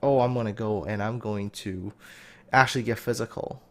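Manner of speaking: ordinary talk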